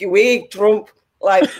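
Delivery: slow, unpracticed, put-on Scottish accent. Imitating scottish protesters with signs: imitating a scottish accent. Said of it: "I can't do a Scottish ac-, accent on demand".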